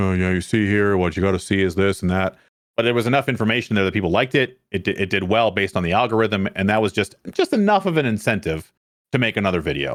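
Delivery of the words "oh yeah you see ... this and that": put-on flat monotone delivery. Recalling an uncut gameplay video, mimicking how they talked in it: imitating own monotone talking. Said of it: "me just talking all monotone".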